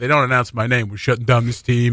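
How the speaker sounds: plain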